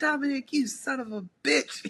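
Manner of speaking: put-on angry swearing. Recalling his dad's reaction while they watched together, imitating an angry outburst. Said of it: "He was mad".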